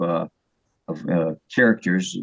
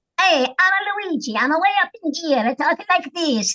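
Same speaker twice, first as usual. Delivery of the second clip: put-on little buzzing bee voice, higher. Showing the voice of a minor bumblebee character: Luigi the bumblebee voice. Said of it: "a little bee buzzing kinda thing".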